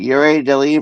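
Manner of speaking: normal talking voice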